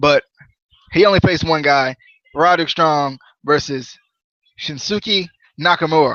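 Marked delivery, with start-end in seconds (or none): 4.6-6.2 put-on Japanese accent and pronunciation. Announcing a wrestling match and saying a wrestler's name: put-on japanese accent. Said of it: "my best Japanese impression for tonight".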